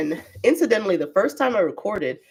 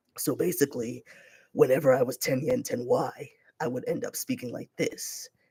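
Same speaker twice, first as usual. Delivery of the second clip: low, soft, made-up motivational guru voice; 5 semitones lower, 6 dB quieter than usual. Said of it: "a character I made up that was meant to be a fake motivational guru".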